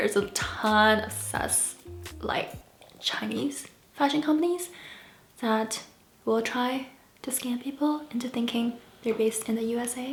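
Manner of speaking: speaking in a whisper. Talking to viewers about online shopping, whispering. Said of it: "I don't know why I'm whispering".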